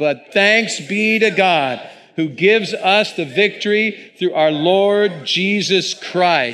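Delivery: strong, triumphant reading voice.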